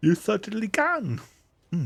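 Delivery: sleepy, yawning speech. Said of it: "I'm so yawny".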